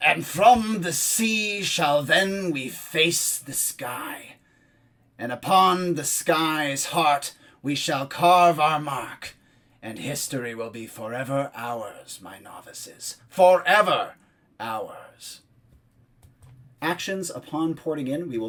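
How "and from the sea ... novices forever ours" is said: grand, slow, booming oratorical voice. Narrator voicing a speaker heard through a closed room, booming voice. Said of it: "you hear a booming voice. It is so loud".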